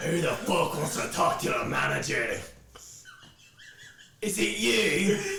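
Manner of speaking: huge seven-foot bugbear monster voice. The narrator voices a very large bugbear kicking through the door: large bugbear voice. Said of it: "very large bugbear kick through the door".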